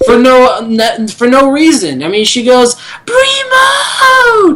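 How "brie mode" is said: very high, mock scream squealed out. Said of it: "she's screaming at the top of her lungs".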